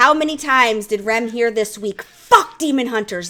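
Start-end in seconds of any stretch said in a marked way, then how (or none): 2.0-3.3 furious, angry, full-force, top-of-the-lungs shout. Recounting what others heard her yell this week, retelling an angry shout. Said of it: "literally at the top of my lungs, pissed off".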